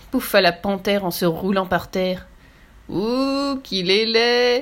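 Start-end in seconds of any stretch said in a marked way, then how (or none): 2.9-4.6 very slow, drawn-out, mocking, sneering snicker. Narrator reads the antelope laughing at Little Zebra, with a sneering snicker. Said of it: "ricana l'antilope".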